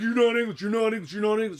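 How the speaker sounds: put-on angry tone. Retelling his reaction to the speaker picking up his mum's accent, mock-angry complaint. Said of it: "John used to get so mad".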